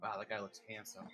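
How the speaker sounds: very quiet, low, under-the-breath mutter. Voicing a character who mutters about the shark person: muttering under his breath. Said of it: "mutters under his breath".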